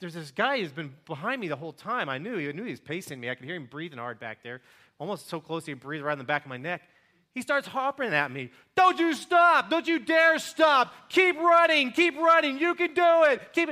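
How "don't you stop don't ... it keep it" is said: very loud, high, barking drill-sergeant yell. Retelling what a man behind them shouted during a run, imitating a drill sergeant yelling. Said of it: "He starts yelling at me like a drill sergeant".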